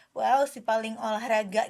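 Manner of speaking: usual speaking voice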